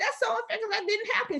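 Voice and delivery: very high, tearful, upset crying outburst. Retelling own protest after getting a yellow card: imitating own past crying. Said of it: "crying and upset".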